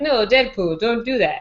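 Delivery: slow, big, epic put-on Russian accent. Discussing a film, quoting Colossus talking to Deadpool in a Russian accent. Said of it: "had like the epic Russian accent".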